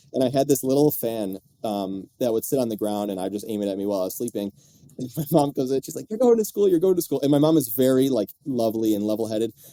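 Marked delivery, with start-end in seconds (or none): 6.1-7.2 acted, frantic, very high, rushed outburst. Telling a story about not wanting to go to school, imitating mom freaking out. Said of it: "she just starts freaking out".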